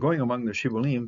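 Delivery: plain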